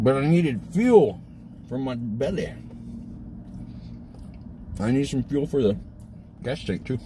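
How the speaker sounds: words pushed through a full mouth, chewing. Talking about delivering a painting, talking with a mouthful. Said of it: "Stop talking with a mouthful".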